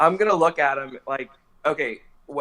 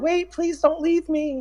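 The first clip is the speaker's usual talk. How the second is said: put-on shrill, girlish, frightened scream, pitched way up; 13 semitones higher than usual. Voicing a possessed girl chasing a fleeing man: screaming like a frightened girl. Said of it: "screaming like the girl".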